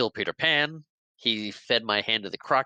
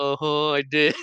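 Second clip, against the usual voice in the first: put-on crying pirate voice, higher; 3 semitones higher, 3 dB louder than usual. Retelling a scene where a captain confronts Gutless the pirate, imitating Gutless crying. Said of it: "he kinda starts breaking down and crying".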